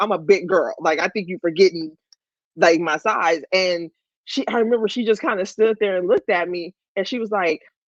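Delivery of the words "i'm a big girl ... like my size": usual speaking voice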